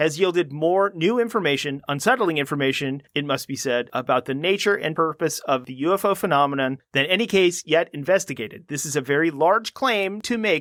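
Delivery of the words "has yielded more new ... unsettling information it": ordinary delivery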